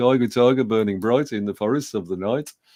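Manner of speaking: put-on Birmingham (Brummie) accent. Retelling reading Blake's Tiger, Tiger aloud in class, in a best Birmingham accent. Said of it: "my best Birmingham accent".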